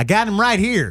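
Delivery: high, loud, mock paranoid accusing voice.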